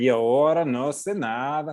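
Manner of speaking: put-on Mexican accent.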